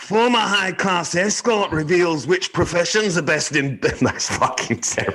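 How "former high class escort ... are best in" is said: bad, poorly done Scottish accent, much higher pitched. Asked by the other host to try a Scottish accent, bad Scottish accent. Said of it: "I'd like you to try a Scottish accent".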